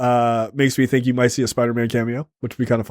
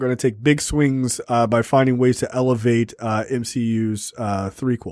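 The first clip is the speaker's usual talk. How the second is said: plain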